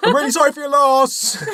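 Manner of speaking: very high, shrill shout. Imagining offering condolences at a funeral, shouting. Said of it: "I'm sorry I just shouted at your mum".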